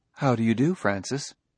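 plain reading voice

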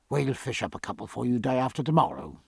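plain

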